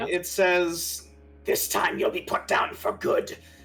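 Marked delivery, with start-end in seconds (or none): 1.4-3.4 put-on goblin voice muttering, much lower pitch. A game master voices a goblin speaking to the party in Goblin: muttering goblin voice. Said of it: "And it mutters, it says in Goblin".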